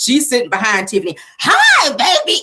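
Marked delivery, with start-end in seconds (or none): 1.4-2.4 very high, loud, shrill squeal. Retelling a reality show scene, imitating a loud high-pitched voice. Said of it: "this loud, high-pitched voice".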